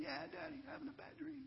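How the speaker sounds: mock very high, whimpering little child's voice. Retelling a scared son's reply to a bad dream question: imitating a child whimpering. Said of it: "He whimpers back and says".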